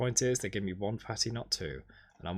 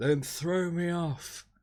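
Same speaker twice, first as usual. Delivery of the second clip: put-on thick Irish accent, angry, riled up, pitched up; 8 semitones higher than usual. Retelling what a late passenger said boarding the plane, thick Irish accent. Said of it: "and a thick Irish accent".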